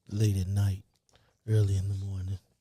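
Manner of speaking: smooth, silky late-night radio DJ voice. Host describing his show's sound, in his smooth grooves radio voice. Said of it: "smooth grooves voice".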